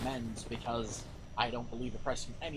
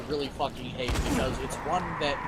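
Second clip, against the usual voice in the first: usual speaking voice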